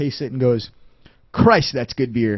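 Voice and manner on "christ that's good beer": put-on grave, dead-serious, very serious tone. Retelling a beer tasting at a seminar: imitating Jeremy Cohen, very serious. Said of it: "he comes in very serious".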